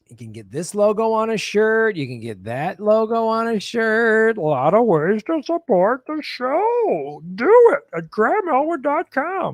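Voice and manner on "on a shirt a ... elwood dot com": high, swooping cartoonish puppet voice, "show" stretched out. Promoting show merchandise and support links to listeners: Muppet voice. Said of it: "I don't know why I'm using a Muppet voice".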